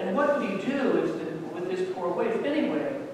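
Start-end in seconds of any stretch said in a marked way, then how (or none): none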